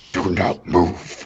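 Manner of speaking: extremely deep voice, like from deep earth. Game narrator voicing Kasim as his stone eyes activate, in Kasim's deepest-earth voice. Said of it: "he says with a voice of the deepest earth".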